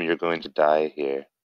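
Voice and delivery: whispered line in a character voice. Speaking in character to a defeated fire giant before cutting his neck: whispering in character. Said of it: "I'm just gonna whisper to him".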